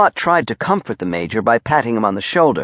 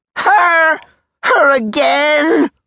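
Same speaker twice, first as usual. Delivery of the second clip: shrill, very high bellowing roar; 4 dB louder than usual. The Major, told by Clot it is because of her, roars. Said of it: "roared the Major".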